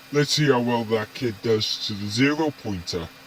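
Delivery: ordinary delivery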